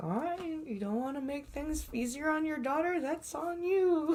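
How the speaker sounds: muttering under the breath. Retelling what the conductor said while walking by: imitating muttering under breath. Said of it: "under her breath".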